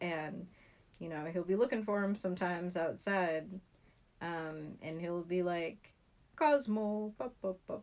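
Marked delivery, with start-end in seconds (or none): 6.3-7.8 loud, poorly done fake Scottish accent. Describing a man calling his outdoor cat, bad scottish accent impression. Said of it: "sometimes I like to do a very bad impression".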